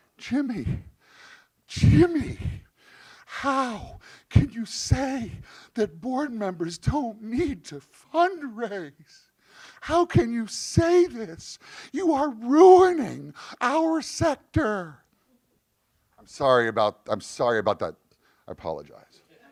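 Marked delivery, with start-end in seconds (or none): 0.2-15.0 very high, slow, drawn-out tearful pleading voice. Retelling a phone call from a United Way Worldwide caller: imitating someone in tears. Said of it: "in tears".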